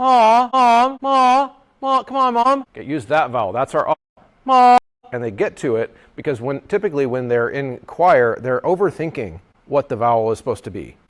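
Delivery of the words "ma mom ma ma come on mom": very high, sustained, drawn-out coaxing call. Showing choir singers a vocal affect exercise: calling Mom. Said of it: "they can get that sound really quickly".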